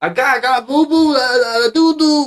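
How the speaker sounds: put-on very high, very loud babbling baby talk. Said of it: "talking baby talk on the mic".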